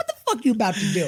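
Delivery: affected, fake-sounding put-on joking voice. Retelling what he said after getting up, in a put-on high voice. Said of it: "I get do my high voice".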